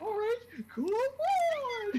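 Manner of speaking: terrible very high, very slow cartoon-mouse voice, "on" stretched. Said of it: "sounds like a terrible Mickey Mouse impression".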